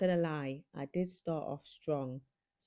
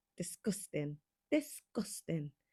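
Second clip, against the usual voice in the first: failed, bad put-on Scottish accent. A host opening a video tries a bad Scottish accent. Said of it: "my worst attempt at a Scottish accent".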